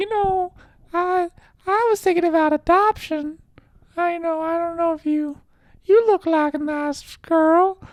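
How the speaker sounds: put-on very high, very loud, shrill, drawn-out old-lady voice. Act out an old lady unlocking the Plan B for a customer, in a Family Guy old baby voice. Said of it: "my voice kind of sounds like the old baby on Family Guy".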